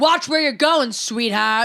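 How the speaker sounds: put-on cranky, grumpy old man voice. Talking about people reading while walking, imitating an angry old man. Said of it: "some angry old man who's like".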